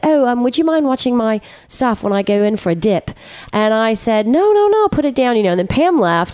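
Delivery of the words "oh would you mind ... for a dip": put-on British accent, higher. Retelling what a man said when he came over to her, imitating a British accent. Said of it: "in the cutest British accent".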